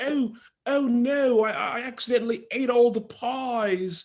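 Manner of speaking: put-on English accent, very high and slow. Joking about actors playing english bakers: put-on english accent. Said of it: "it'd be great if they both did their accents".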